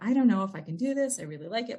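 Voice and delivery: put-on whining voice. Retelling talking with a friend about doing energy work: imitating own whining. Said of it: "I'm just kind of whining all over him".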